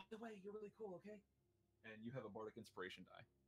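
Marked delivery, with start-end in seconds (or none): 0.0-1.2 very high, hushed half-whisper. Voicing a character who uses a bonus action to half-whisper to a player: half-whispering. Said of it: "to whisper to you".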